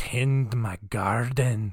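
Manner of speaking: put-on Irish-accented voice. Voicing the hulking woman from the story, in an Irish accent. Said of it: "Why is she Irish now?".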